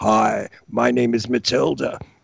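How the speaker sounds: very low, guttural, gravelly put-on voice. Mocking how women at the movies talk: put-on gravel voice. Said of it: "when they do the gravel voice".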